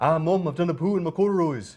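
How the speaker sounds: fast, rattled-off, put-on Scottish brogue. Running through a string of put-on accents, next a Scottish accent.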